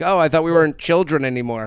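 ordinary talk, nothing marked

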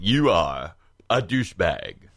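put-on deep actor voice. Doing an impression for the others after naming it: George Takei impression. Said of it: "Here's my George Takei impression".

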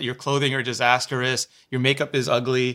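usual speaking voice

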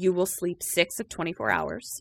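put-on very calm voice. Retelling a story, quoting what she said, imitating very calm speech. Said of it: "Catherine just very calmly says".

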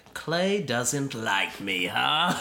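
slow, drawling put-on comic-book villain voice. Imagining how he'd react to something negative, in Joker voice. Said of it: "Why'd you have to say it in the Joker voice?".

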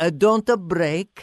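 put-on speaking with Italian accent. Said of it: "said in the Italian accent".

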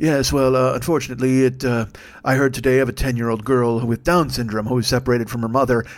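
put-on somber tone. Mimicking a Democratic strategist during an argument, mock-somber. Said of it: "all somber".

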